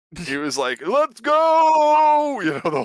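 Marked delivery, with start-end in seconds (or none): 0.8-2.4 very high, loud carnival-barker call, go stretched. Describing a streamer he followed, imitating a carnival barker. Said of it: "this guy was like a carnival barker".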